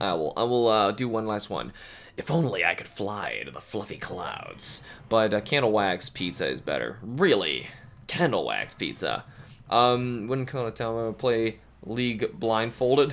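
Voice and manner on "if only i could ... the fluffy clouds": put-on snake character voice. Doing one last line in a put-on snake voice: snake voice. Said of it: "in the snake voice".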